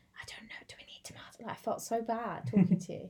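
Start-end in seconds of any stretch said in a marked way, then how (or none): 0.2-1.4 put-on whisper, quieter. Retelling a shop visit together: retelling own past whisper. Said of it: "I literally had to whisper to Cameron".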